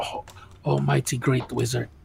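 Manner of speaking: whispering voice. Whispering in character to a wizard while standing next to Patience: whisper. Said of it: "so I'm gonna whisper".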